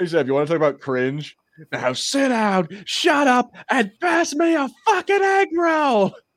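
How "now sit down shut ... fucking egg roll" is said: acted, very high, very slow, rising, drawn-out scream. Quoting a movie character's line demanding an egg roll: imitating a screamed movie line. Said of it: "he screams at them to give him an egg roll".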